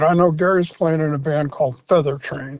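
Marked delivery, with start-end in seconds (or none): none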